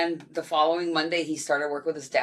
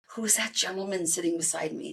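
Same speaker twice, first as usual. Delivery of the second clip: hushed, half-whispered voice; 2 semitones higher, 4 dB quieter than usual. At family pictures on the balcony, speaker quotes their dad, half-whispering. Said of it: "he whispers".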